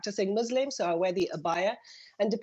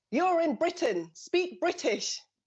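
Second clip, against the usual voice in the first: mock, loud, high-pitched shouting; 8 semitones higher than usual. A mother recalls a passing man shouting at her: retelling a man's loud shout. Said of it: "shouts at me and very loudly and says".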